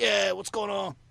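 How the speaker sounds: loud, rough, gruff roadie voice. Recalling a man who came on to wish Claude happy birthday: imitating a gruff voice. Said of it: "like this real gruff sound".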